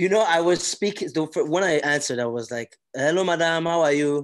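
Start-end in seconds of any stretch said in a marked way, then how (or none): 2.9-4.2 exaggerated, overdone Nigerian accent, louder. Recalling answering and greeting a woman, exaggerated Nigerian accent. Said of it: "I exaggerated my voice a bit".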